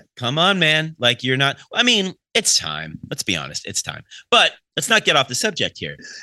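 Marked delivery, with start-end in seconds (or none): none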